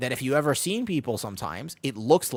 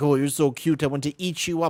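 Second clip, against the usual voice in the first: mock doting, cooing older-person voice; 2 semitones higher than usual. Retelling how older people talk to children: imitating a doting older person. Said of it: "older people will look at children and be like".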